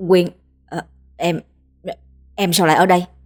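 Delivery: flustered, panicked stammering. Minh, caught by Quyên with another woman, stammering in panic. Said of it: "Hắn lắp bắp".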